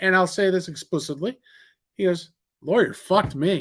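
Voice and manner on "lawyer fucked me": dead serious, matter-of-fact, deadpan delivery. Retelling a prisoner's line from the movie: imitating a deadpan line. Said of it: "with a straight face".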